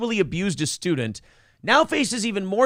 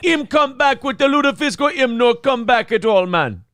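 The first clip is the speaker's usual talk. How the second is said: loud, bad, put-on Jamaican patois accent; 4 semitones higher, 6 dB louder than usual. Playing a character described as Swedish Jamaican, in a bad Jamaican accent. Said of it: "Swedish Jamaican".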